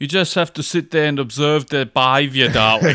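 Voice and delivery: put-on South African female accent and voice. Replying to the other speaker, in a South African woman's accent. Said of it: "That voice of the South African woman".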